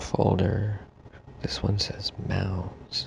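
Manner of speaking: hushed whisper. Reading folder labels aloud in a quiet reading room: whispering. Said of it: "whispering because it's a quiet reading room".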